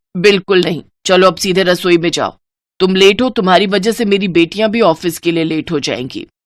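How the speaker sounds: plain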